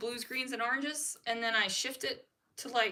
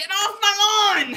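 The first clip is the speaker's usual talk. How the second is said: put-on very loud, high, slow, cranky old lady yelling; 8 semitones higher, 15 dB louder than usual. Imagining being the crazy old lady on the porch: imitating a yelling crazy old lady.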